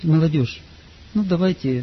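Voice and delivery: meek, hesitant, small wisp of a voice. Describing an indecisive youth leader, imitating a timid little voice. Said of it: "И таким голоском".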